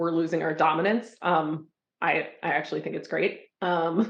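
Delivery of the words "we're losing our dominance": ordinary talk, nothing marked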